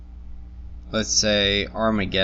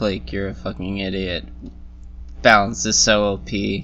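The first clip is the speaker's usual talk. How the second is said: plain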